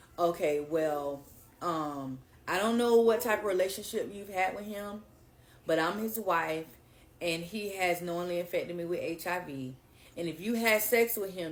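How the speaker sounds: usual speaking voice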